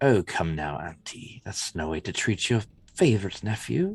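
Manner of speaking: quietly spoken male villain voice. A voice addresses his auntie as her favorite nephew; quiet male voice. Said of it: "male voice speaking quietly".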